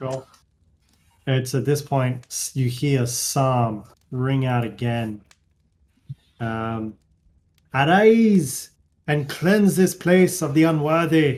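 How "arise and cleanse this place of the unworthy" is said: put-on slight German accent, loud and high, Arise drawn out. Narrating a game scene, voicing a call that rings out again: slight German accent. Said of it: "It's with a little bit German".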